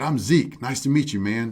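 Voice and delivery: put-on Louisiana accent. Retelling a Louisiana man introducing himself, imitating Zeke's heavy accent. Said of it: "real heavy accent".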